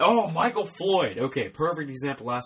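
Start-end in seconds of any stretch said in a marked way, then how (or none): 0.0-1.2 very high, shrill, loud screamed outburst. Two hosts discuss which players to sit, and one screams out a name, screaming. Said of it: "Sorry for screaming like that".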